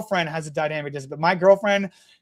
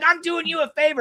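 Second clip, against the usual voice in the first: put-on very high, shrill, hollered yell; 9 semitones higher than usual. Retelling what a man parked in a spot said, imitating someone yelling. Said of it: "he's yelling at me".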